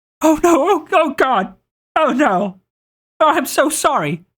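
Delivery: very high, slow, drawn-out, hyperventilating panic. In a game scene, a character sees something smashed underfoot, panicked hyperventilating. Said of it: "And just starts freaking hyperventilating".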